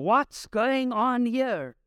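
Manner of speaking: high, slow shouting. A speaker retelling a Gospel scene acts out John, John shouting, retold. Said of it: "you can imagine John going".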